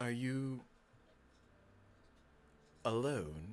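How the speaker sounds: quiet, eerie, creepy put-on voice. Narrating a tabletop game, a hidden voice speaks to the player: creepy voice. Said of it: "You got the creepy voice".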